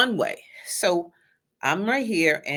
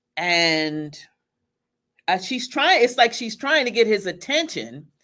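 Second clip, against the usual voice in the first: usual speaking voice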